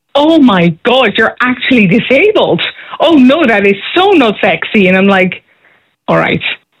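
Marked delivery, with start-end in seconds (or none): 0.1-4.8 exclaiming slowly and emphatically, almost shouting. Retelling how a man reacted on seeing the speaker come in, imitating someone almost shouting. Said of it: "he literally stands up and almost shouts".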